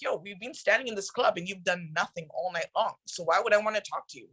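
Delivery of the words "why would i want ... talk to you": ordinary talk, nothing marked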